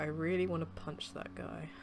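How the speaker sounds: muttered under breath. Playing a character while the narrator describes the scene: muttered under breath. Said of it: "I sort of like mutter under my breath".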